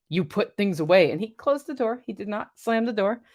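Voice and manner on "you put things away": grouchy, sour, put-out tone. Retell what he answered when you said hey at the door, imitating someone's grumpy voice. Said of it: "he goes in a grumpy voice".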